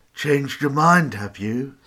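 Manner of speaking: self-satisfied taunt. Reading the priest at his desk asking Louise as she returns: smug. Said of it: "He asked smugly".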